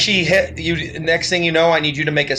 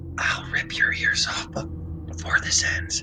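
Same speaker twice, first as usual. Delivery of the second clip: hushed whisper close to the ear. A game master voices a clawed creature at a player's ear: whispering. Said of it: "she whispers in your ear".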